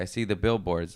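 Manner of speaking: normal talking voice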